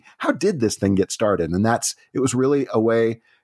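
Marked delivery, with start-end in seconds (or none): none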